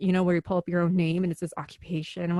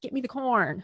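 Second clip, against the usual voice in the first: Chicago accent, much higher pitch; 5 semitones higher than usual. Explaining how their own accent fluctuates, demonstrating a Chicago accent. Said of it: "schooling on the Chicago accent".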